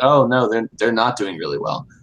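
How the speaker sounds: acted dead-earnest, matter-of-fact, serious tone. Recounting a listener who missed the speaker's sarcasm, imitating a serious reply. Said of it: "she looked at me seriously and was like".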